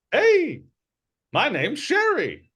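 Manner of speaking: squeaky, very high, swooping little gnome wizard voice. Voicing a bouncing gnome wizard greeting the party: little gnome wizard voice. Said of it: "it's a little gnome wizard".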